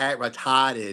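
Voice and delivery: Boston-accented delivery. Saying a line in his boston accent: boston accent. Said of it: "in my my Boston accent".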